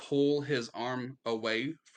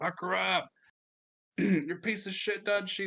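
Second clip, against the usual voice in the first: rowdy, pitched-up jeering taunt; 7 semitones higher than usual. Voicing an arena crowd jeering at a wounded fighter: jeering crowd shouting. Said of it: "they're loving it".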